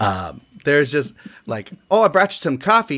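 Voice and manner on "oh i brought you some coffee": put-on Minnesotan accent, higher. Quoting Marge at the crime scene in the film: Marge Minnesotan accent. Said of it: "so many Minnesotaisms in that scene".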